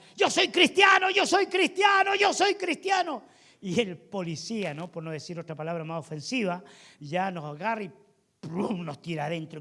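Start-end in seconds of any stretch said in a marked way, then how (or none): 0.2-3.2 very high shout, said repeatedly. Retelling how a friend shouted while police arrested them: imitating a friend shouting. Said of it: "mi amigo empezaba a gritar".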